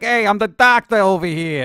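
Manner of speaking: heavy, laid-on, thick New York accent. Speaker pitches a new doctor character, in a thick New York accent. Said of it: "like a really thick New York accent".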